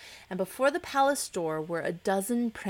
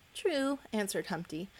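ordinary delivery, nothing marked

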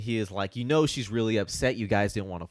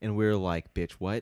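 usual speaking voice

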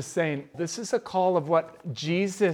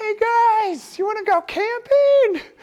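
very high small voice, loud and slow, "guys" stretched; 6 dB louder than usual. Describing one of his spiritual parents, the speaker imitates him: Sean Murphy's small voice. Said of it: "a big man with a really small voice".

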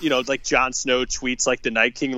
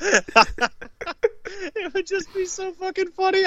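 cracking up mid-sentence, laughing, very high-pitched; 7 dB quieter than usual. Pitching a joke idea to the others, laughing while talking. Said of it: "I'm laughing so hard at my own shit".

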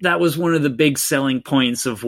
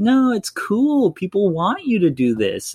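high, soft, slow, lilting coaxing voice. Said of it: "he's soft and slow and rhymey and, and, and lilting".

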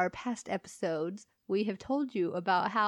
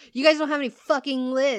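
loud, raised yell; 4 semitones higher, 7 dB louder than usual. Retelling how a man yelled at a gas station cashier, imitating someone yelling. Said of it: "he just starts yelling at her".

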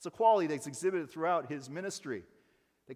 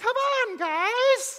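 booming, loud, high-pitched holler; 9 dB louder than usual. Retelling how Bob Goff would say it: Bob Goff voice. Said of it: "he says it, like, in that voice".

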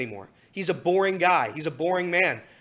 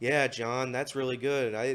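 low, flat, dull, bored mumble; 6 semitones lower, 6 dB quieter than usual. Describing Barry Larkin coming on with a frown: imitating Barry Larkin's bored mumble. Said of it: "he just mumbles in the most mundane words, the most boring sentences".

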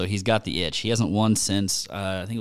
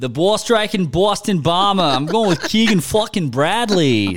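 awful fake Boston accent, much higher, louder; 10 semitones higher, 7 dB louder than usual. Speaker announcing who he is picking, in a bad Boston accent. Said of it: "What an awful Bostonian accent".

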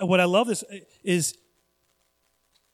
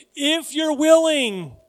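willing drawn out slow, high and loud. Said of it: "Not if you can".

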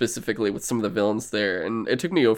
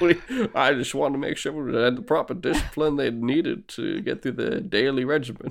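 put-on Scottish actor voice, Scottish accent; 3 semitones higher, 4 dB quieter than usual. Joking about a Bond scene while chatting: Sean Connery voice. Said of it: "I just fucking love sounding like Sean Connery".

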